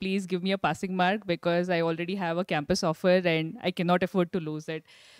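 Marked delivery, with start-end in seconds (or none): none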